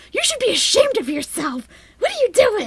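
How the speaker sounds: put-on mocking yell. Retelling how an ex scolded the puppy, mocking the speaker: imitating a mocking scolding yell. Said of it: "making fun of me from yelling at the doctor".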